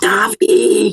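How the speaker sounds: whispered yell. Calling out a name to someone nearby, in a shout-whisper. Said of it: "like whisperingly?".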